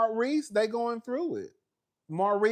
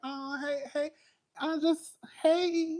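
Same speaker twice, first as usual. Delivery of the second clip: put-on very slow, high, drawn-out childlike baby voice; 6 semitones higher than usual. Imitating the baby voice Kimmy does when saying hey: Kimmy's baby voice. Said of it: "you know how Kimmy do that baby voice? ... like".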